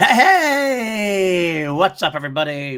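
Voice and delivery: very loud, very slow, drawn-out, voice cracking. Greeting everybody at the start while losing his voice: losing voice, cracking. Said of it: "I'm losing my voice".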